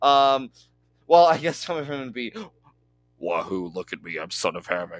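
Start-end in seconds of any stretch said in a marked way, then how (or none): 3.2-5.0 very low, deep, boastful voice. Imitating how a wrestler sounds: imitating Son of Havoc's voice. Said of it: "in his, like, voice".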